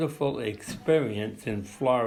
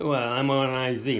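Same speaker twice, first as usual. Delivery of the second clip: ordinary talk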